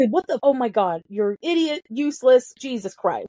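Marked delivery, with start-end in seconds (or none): none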